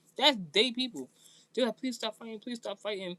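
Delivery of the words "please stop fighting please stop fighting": repeated, begging, pleading tone. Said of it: "They were pleading with her".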